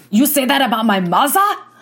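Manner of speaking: mock angry German accent.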